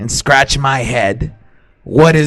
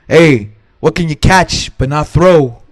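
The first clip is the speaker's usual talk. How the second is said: put-on New Jersey accent. Telling riddles to the other speaker in a stereotypical New Jersey guy accent. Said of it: "I'm gonna read it as stereotypical New Jersey guy".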